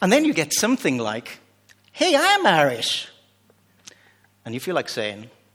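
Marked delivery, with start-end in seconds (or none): 1.9-3.1 very high, very slow, drawn-out put-on American accent. Retelling someone who claims to be irish, in a put-on american accent. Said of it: "I don't do American accent".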